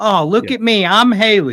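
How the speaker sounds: put-on shrill, very high, loud character voice. Quoting a person and doing their voice: imitating Haley's voice. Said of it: "how are you gonna quote them and not do the voice?".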